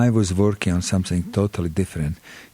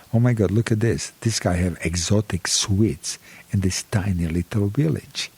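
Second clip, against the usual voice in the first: ordinary talk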